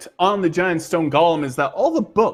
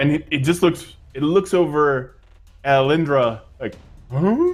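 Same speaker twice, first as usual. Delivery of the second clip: ordinary talk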